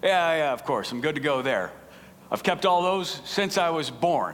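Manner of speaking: play-acted, smug, self-assured, pleased-with-himself tone. Retelling a Bible story, the young man answers Jesus, retelling a smug reply. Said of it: "replies quite smugly".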